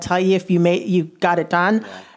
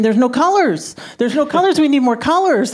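mock high screaming, repeated over and over; 8 semitones higher than usual. Retelling own past words while breaking stories: imitating own past screaming. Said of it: "And I kept screaming".

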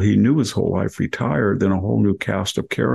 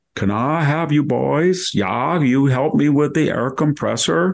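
put-on heavy Swedish accent throughout, pitched up; 6 semitones higher than usual. Retelling a World War I veteran phoning to ask the boys for help: very Swedish accent. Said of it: "Very Swedish accent".

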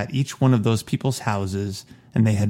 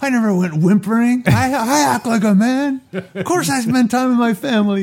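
very high-pitched, shouting, ranting yell; 13 semitones higher, 4 dB louder than usual. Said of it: "shouting at the screen".

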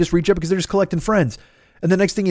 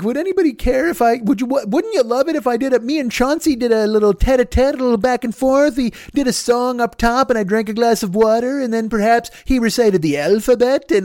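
mocking put-on voice, higher pitch; 5 semitones higher than usual. Imitating a post by people online about a weekly puppet show: mocking imitation of a poster. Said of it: "this motherfucker's just like".

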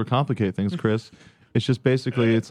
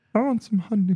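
very high-pitched cartoon bear voice; 9 semitones higher than usual. Trying a voice that a listener cannot quite place, an attempted Pooh voice. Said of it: "Is that Piglet? Or is that you're doing poo".

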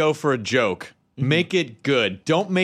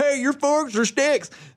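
very high-pitched put-on Southern accent; 11 semitones higher than usual. Guest recalls doing a bit in a southern voice: southern accent. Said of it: "I did a Southern voice going".

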